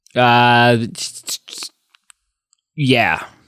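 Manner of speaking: lukewarm, unexcited, half-hearted tone. Asked if ready for some Oscar trivia, answering; unenthusiastic. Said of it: "You don't sound excited".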